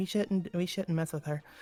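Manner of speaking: quiet mutter, under the breath. Speaking in character as an old lady leaves: said under the breath. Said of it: "I just say under my breath".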